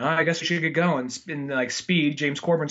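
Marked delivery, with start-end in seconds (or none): 0.0-1.1 put-on calm voice. Retelling a movie scene, imitating calm Charles Bronson. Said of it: "Bronson's just really calm".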